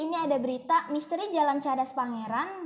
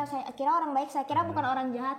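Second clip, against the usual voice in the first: normal talking voice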